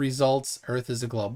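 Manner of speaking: normal talking voice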